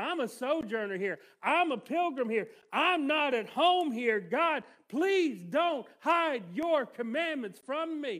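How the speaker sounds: loud, slow, desperate, begging cry. Quoting the psalmist's plea to listeners: voicing the psalmist's desperation. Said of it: "Do you hear the desperation in his voice?".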